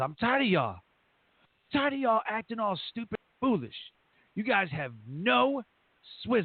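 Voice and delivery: put-on, high, screaming drill-sergeant yell. Retelling screaming at them halfway through basic training: retelling screaming at recruits. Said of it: "I'm screaming at them".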